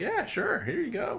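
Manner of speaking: high, easygoing, obliging tone. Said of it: "Scully's just like".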